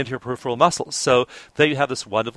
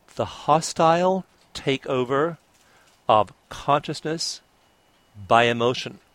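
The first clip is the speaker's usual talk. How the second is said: slow, deliberate, halting, weighty word-by-word emphasis. Quoting a phrase so listeners really get its impact, slow and deliberate. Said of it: "I want to say this slowly so you really get the impact of these words".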